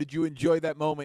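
usual speaking voice

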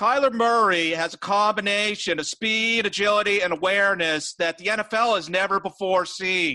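whiny put-on voice. Talking about hyped quarterbacks, doing a Mike Florio impression. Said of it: "I'm going to try to half-ass an impression of Mike Florio here".

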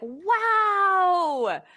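high, drawn-out, impressed "wow". Showing the opposite of sarcasm: wow to a little kid. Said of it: "you're talking to a little kid".

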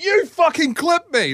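very high-pitched, enraged, furious outburst. Retelling how Dad swore at other riders: imitating Dad swearing angrily. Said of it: "Dad is just swearing, tearing shreds off these people".

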